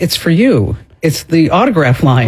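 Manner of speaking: ordinary talk, nothing marked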